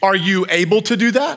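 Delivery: put-on condescending tone. Retelling what she asked about putting the box together, mock-condescending question. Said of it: "with somewhat of a condescending tone".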